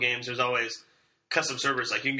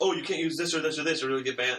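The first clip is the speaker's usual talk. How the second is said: plain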